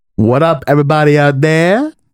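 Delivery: nineties New York Bronx accent. Podcast co-host greets the listeners in a put-on voice: Bronx accent. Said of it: "What accent was that?".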